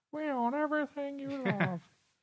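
very high, squeaky cartoon voice. Joking with another speaker about Disney buying Facebook, Mickey Mouse impression. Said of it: "That's my Mickey Mouse impression".

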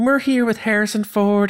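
courteous put-on Southern accent. Retelling how an old interview opened: imitating a polite southern lady. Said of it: "very polite, Southern, and she's like".

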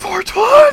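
very high, shouting, shrieking frantic glee. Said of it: "Morg, calm down".

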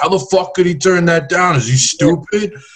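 put-on thick New York accent, pitched very high. Acting out people who hate their jobs judging someone who turned it down, heavy New York accent. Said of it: "That was the biggest New York accent".

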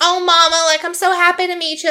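put-on Southern accent. Retelling a scene, speaker quotes Angela meeting the mom: Angela's southern accent. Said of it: "in her like southern".

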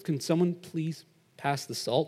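very quiet, hushed, meek voice. Amid everyone screaming at dinner, retelling Benson asking for the salt: imitating Benson asking quietly. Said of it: "like really quietly".

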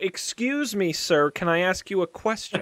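winning, charming manner. Player's character approaches a stranger to ask him a question, in a charming tone. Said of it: "it was the way you said them that you have charmed".

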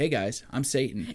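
plain

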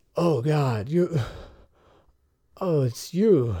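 feverish, sick-sounding voice. Game master voicing Brock, feverish and sweaty, just conscious again in bed. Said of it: "fevery and sweaty".

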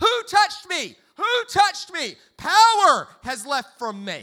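very loud frantic crying out. Retelling how Jesus reacts to being touched: acting frantic. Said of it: "he goes absolutely crazy".

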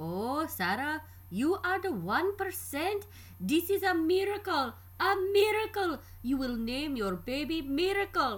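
put-on heavy Indian accent laid on thick, loud and high. The speaker quotes her doctor's reaction on the phone in a thick Indian accent. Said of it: "He says in his thick Indian accent".

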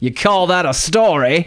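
put-on high Aussie accent. Speaker introducing the second story, Crocodile Dundee impression. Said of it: "That's my Crocodile Dundee impression".

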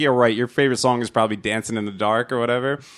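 plain

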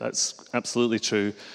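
ordinary delivery, nothing marked

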